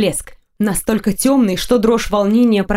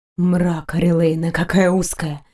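lower, almost growling whisper; 4 semitones lower than usual. Reading a man's line to Oreleyna, whispered, almost growling. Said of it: "прошептал он, почти рыча".

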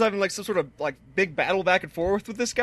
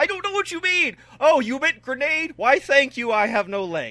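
higher put-on yelling soldier voice; 6 semitones higher than usual. Acting out a soldier yelling in battle, imitating Tolkien yelling in battle. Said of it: "he's yelling in the wrong language".

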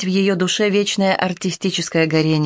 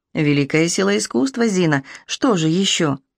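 plain

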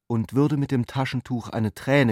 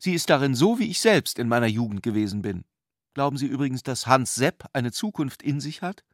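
plain reading voice

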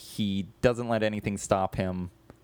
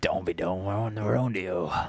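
put-on growly, thick Cockney accent; 2 semitones lower than usual. Discussing the Super Mario Brothers movie, doing Bob Hoskins Cockney growl. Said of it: "That's my Bob Hoskins".

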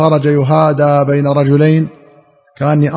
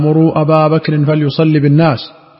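normal talking voice

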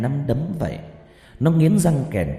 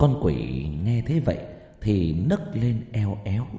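ordinary delivery, nothing marked

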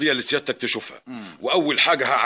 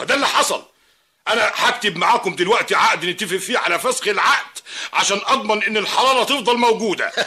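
furious, angry, pitched-up delivery; 8 semitones higher, 3 dB louder than usual. Complaining to mr. ammar that the service was cut off again, angry. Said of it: "اهدى بس،".

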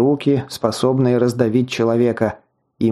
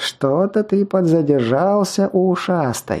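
high, twittering, mocking chirp with lilting tune; 6 semitones higher than usual. Narrating a waiting girl's remark to the narrator on the stairs, chirping. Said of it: "прощебетала она".

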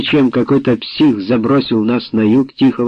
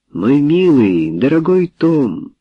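tender, loving, slow, affectionate voice; 3 semitones higher than usual. Barbara speaks to Tom after his outburst: affectionately. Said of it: "ласково сказала Барбара".

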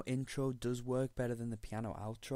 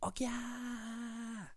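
high-pitched mock screaming like an excited crowd. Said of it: "you know how they scream".

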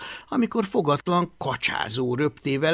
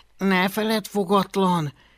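hissing through clenched teeth, much higher; 5 semitones higher than usual. Hablaty speaks to his little dragon fogatlan before a crowd, hissing through clenched teeth. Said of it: "sziszegte Hablaty összeszorított fogakkal".

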